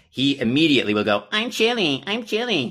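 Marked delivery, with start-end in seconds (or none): 1.3-2.7 very high, slow, whiny nasal voice. Speaker shows how Colin echoes the speaker saying they're chilly: imitating Colin's nasally whiny voice. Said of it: "exactly like this nasally whiny kind of voice".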